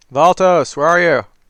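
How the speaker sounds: very loud, booming hollering yell. Walking up the path, calling out to find Valtos, booming yell. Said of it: "booming voice yelling".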